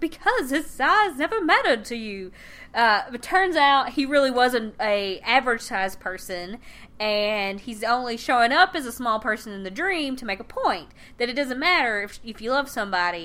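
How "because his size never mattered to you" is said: weird dreamy voice, pitched up. Recapping a dream scene, the speaker quotes Dorothy in her weird dream voice. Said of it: "Dorothy in her weird dream voice is like".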